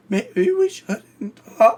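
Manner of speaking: very high, hoarse, near-voiceless croak. Retelling a phone call made with almost no voice, imitating own hoarse, voiceless speech. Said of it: "It sounded worse than that".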